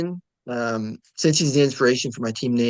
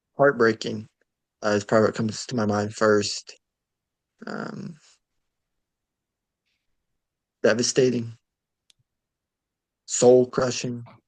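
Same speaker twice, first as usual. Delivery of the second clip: fake solemn, grave, long pauses between words. Answering how an elimination feels, mock solemn, pausing between words. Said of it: "the quiet contemplation in between every word".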